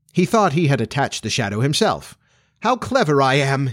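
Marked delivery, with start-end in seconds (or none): 2.6-3.8 slow, rapturous, boastful crowing. Peter, believing he attached his shadow himself, crowing rapturously. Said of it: "he crowed rapturously".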